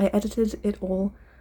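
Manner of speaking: stumbling, fumbling over the words. Explaining the context of a lost video edit, stumbling over the words. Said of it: "(stumbling over the word)".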